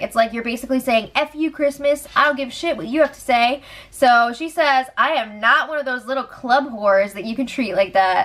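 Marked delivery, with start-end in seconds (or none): none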